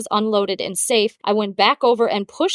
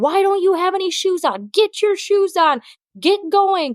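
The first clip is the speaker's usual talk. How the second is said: high, raised, loud yelling; 9 semitones higher than usual. Retelling how they yelled at a crying boy to put shoes on: retelling yelling at him. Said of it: "I'm yelling at him like".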